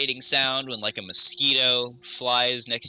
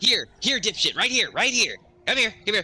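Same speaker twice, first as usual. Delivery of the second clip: annoying tiny pixie voice, much higher; 8 semitones higher than usual. Game master voices a pixie calling to a player, in an annoying little pixie voice. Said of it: "you hear that annoying little pixie's voice".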